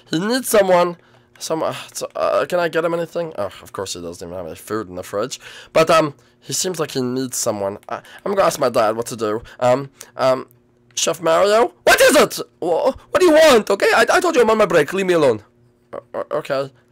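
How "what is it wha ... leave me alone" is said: upset, high-pitched, snappish outburst. Voicing a chef character snapping at someone during his break: upset, snapping outburst. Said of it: "It just, like, freaks out".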